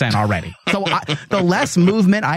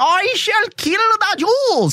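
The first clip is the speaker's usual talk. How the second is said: thick cartoon German accent, pitched very high. Speaker mocks how a man sounds, in a thick cartoon German accent. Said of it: "the cartoon accent as well, though he has that thick cartoon like".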